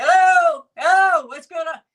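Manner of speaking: very high, shrill, very loud shouting. Retelling people calling out on arrival: imitating people yelling. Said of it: "they're yelling".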